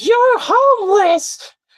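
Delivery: mock very high, shrill, angry yelling outburst. Retelling what the angry lady yelled out: imitating someone yelling. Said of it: "she yells out".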